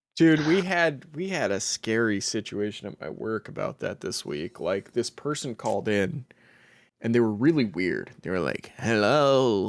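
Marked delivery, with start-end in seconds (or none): 8.8-9.7 put-on creepy old man voice, drawn-out hello. Telling about a weird caller at work, imitating the caller, old creepy man voice. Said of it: "old creepy man voice".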